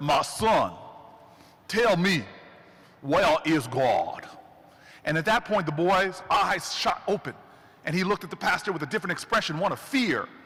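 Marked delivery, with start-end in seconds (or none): 0.0-4.3 very slow, deep baritone voice. Retelling the pastor, hand on the Bible, asking the boy; deep baritone voice. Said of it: "in his deep baritone voice".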